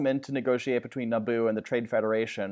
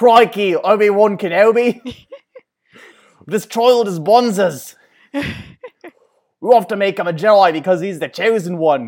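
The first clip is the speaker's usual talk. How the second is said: put-on Australian accent, louder and higher; 8 semitones higher, 11 dB louder than usual. Retelling a Star Wars scene, doing Qui-Gon Jinn in an Australian accent. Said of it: "Even though it sounds Australian".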